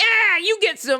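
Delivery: mock, put-on seductive come-on voice.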